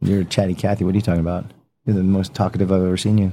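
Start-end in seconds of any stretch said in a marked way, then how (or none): none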